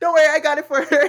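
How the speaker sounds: high, loud, breezy, chirpy reassuring tone.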